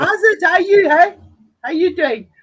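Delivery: put-on Afrikaans-accented speech. Retelling a phone greeting from a fellow mod: Afrikaans accent imitating Hendo. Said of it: "perfect Afrikaans cat accent".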